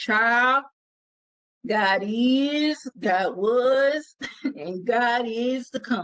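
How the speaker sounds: very slow, deliberate, drawn-out country voice. Quoting a father's answer to his child's question, said very slow. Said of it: "he would say it real slow".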